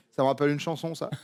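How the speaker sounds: plain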